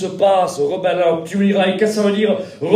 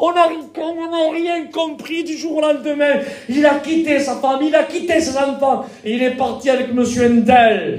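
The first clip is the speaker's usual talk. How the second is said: mock crying, tearful voice, higher pitch; 6 semitones higher than usual. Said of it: "En pleurant, les parents".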